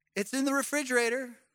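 play-acted sweet, patient, gracious, compassionate tone. Retelling her answer when he can't find the relish, mock sweet, patient voice. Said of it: "in her sweet, compassionate, gracious, patient voice".

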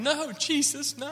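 put-on, very high, tearful sobbing outcry. Retelling an aunt's reaction on hearing Charles passed away, imitating someone crying. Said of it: "She started crying, going".

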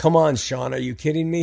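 usual speaking voice

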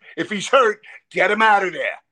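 put-on loud yell. Retelling a line yelled during the first game: imitating own past yell. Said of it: "And I yelled at".

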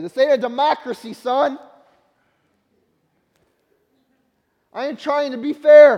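booming, mocking, sarcastic, high and loud. Quoting a reply to a child who says it's not fair: imitating a sarcastic reply. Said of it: "what do I sarcastically say?".

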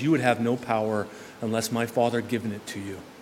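very calm, soft, composed delivery. Imagining Jesus looking into Pilate's eyes and speaking, acting out a very calm voice. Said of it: "in a very calm voice".

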